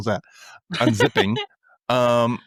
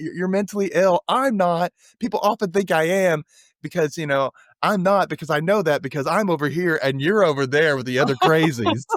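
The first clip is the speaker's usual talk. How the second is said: put-on teasing call, called out and pitched up; 5 semitones higher than usual. Retelling a scene where a character yells from across the room: imitating someone yelling. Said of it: "he yells out from across the room".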